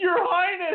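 put-on, very high scream, as if called from afar. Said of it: "just screaming it".

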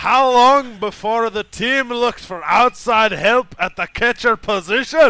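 very high, very loud put-on Scottish accent. Reading a question sent in by Whiskey Rick, put-on Scottish accent. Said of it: "I will attempt to read this in the proper accent".

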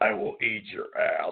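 gravelly, rough put-on voice, words ground out. Speaker quotes a radio host they love listening to; gravelly Alex Jones impression. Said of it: "he's just so gravelly".

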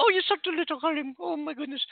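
put-on elderly Scottish woman voice. Comparing South African and British accents, slipping into a Mrs. Doubtfire voice. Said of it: "Mrs. Doubtfire".

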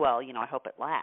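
mock sarcastic, cutting, low snide tone. Recounting what they said to a man whose life had changed, retelling a snide remark. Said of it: "I just kind of snidely said".

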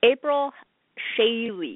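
stretched out, very slow on purpose. Saying a name deliberately slowly so listeners will hear it, said slowly on purpose. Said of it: "I said that slow on purpose".

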